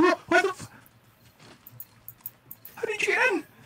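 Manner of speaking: startled shriek.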